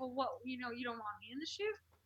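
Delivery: acted annoyed tone. Recounting how he left her out of a photo shoot, retelling being super annoyed. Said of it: "i was like super annoyed".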